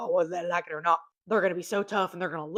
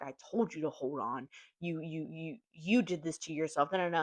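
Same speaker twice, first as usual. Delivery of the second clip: mock-scolding tone; 8 dB quieter than usual. Retelling how a woman scolded a little boy who fell off a swing, mock-scolding. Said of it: "she starts berating him".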